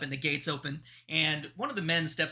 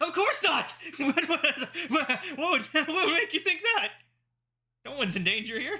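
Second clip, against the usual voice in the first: panicked, much higher pitch; 12 semitones higher than usual. Asked in a whisper whether he's in danger, a man denies it, freaking out. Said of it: "you're freaking the fuck out".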